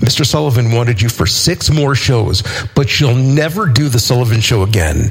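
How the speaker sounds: ordinary delivery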